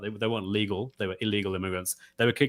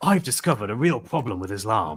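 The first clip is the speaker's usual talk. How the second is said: put-on, mock proper British accent. Imagining a documentary presenter investigating Islam, in a proper British accent. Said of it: "in a proper British way".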